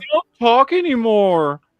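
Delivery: mock whiny complaining. Imitating a brother complaining that they don't talk: imitating someone complaining. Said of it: "He's bitch".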